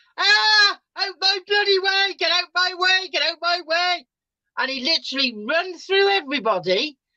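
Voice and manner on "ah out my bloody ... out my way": frightened, high-pitched screaming. Retelling how a frightened man ran through the group: imitating someone screaming. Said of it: "he come out screaming at them".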